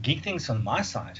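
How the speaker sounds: surprised, taken aback, caught off guard. Called on first to share his geeky news with the group, surprised. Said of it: "Why do you sound so surprised?".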